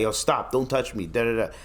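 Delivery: ordinary talk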